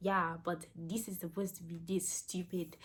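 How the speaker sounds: put-on Zimbabwean accent. Quoting a man who became verbally abusive to her, imitating a Zimbabwean accent. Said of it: "he would look at me with his Zimbabwean accent".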